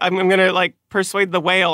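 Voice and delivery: plain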